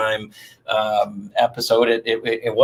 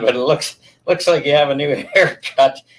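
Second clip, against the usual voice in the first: words broken up by laughing; 4 semitones higher than usual. Reading out a viewer's question, laughing while talking. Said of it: "sorry for laughing".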